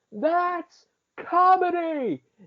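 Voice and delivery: very high, shrill, loud put-on screaming shout. Retelling a clown's line at the end of an animated movie: imitating a loud scream. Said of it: "screams really loudly".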